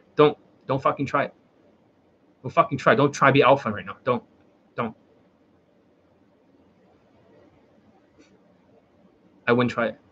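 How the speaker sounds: worked-up, wound-up emotional outburst. Streamer warning a chat member against making another comment, emotional. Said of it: "you're quite emotional".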